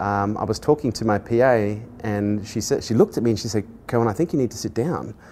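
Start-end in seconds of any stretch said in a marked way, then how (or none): none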